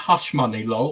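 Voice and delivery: plain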